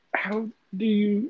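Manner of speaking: high, loud, slow, stunned voice.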